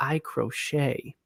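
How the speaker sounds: soft confiding whisper, kept under the breath. Retelling a woman's answer to a man's question, retelling a whisper. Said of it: "she whispered to him and said".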